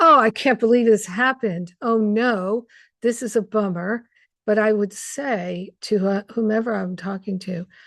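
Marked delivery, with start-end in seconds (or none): 0.0-4.0 fed-up, annoyed, exasperated, frustrated tone. Retelling own past reaction to a team mistake: imitating own past frustration. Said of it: "Because I'm annoyed and frustrated".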